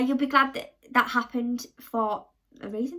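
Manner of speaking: normal talking voice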